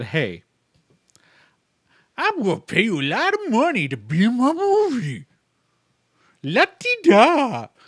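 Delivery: slow delivery with pitch swooping up. Imagining a movie offer, doing an Adam Sandler impersonation. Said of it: "That's my best Adam Sandler impersonation".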